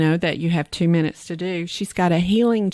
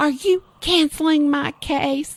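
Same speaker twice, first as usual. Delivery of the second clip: put-on scream, higher pitch; 9 semitones higher than usual. Retelling how a surgeon reacted to a cancelled case: imitating someone screaming. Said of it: "He is just screaming".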